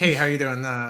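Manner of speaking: put-on jovial tone. Imitating a jovial guy who makes the crack, mock-jovial greeting. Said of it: "He's a jovial guy. He's like".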